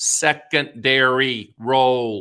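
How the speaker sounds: slow, deliberate, word by word. Explaining the role of interest rates in annuity pricing: said slowly. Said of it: "I'm gonna say it slowly".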